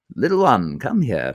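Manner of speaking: put-on heightened, old-fashioned English RP accent. Speaker shows off a favorite voice to do, an Alec Guinness heightened RP voice. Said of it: "that beautiful old English like heightened R P voice".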